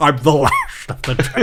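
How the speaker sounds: put-on Scottish accent. Voicing a dragon that has just got its voice back: Sean Connery voice. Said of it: "it's a Scottish accent".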